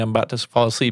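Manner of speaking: ordinary delivery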